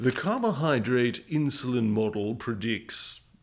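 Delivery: cheap, trashy, bad put-on British accent. Quoting the researchers while explaining a diet study: trashy British accent. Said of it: "no idea why I went British with the trash accent there".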